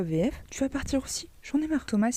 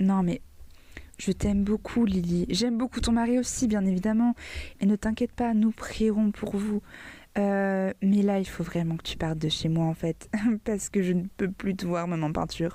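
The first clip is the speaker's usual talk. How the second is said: ordinary talk, nothing marked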